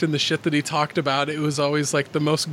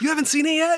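squeaky, very high-pitched, pitchy voice; 13 semitones higher than usual. Speaking to the person they're about to record with, in a high pitchy voice. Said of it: "get all like high pitchy voice about that".

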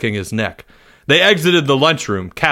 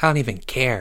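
soft, hushed half-whisper under breath, no voice; 7 dB quieter than usual. A boy answering his friend, half-whispering. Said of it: "he whispered".

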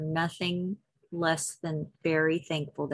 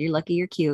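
plain

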